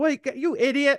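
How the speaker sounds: mock yell, pitched very high. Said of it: "yelling at my paint station".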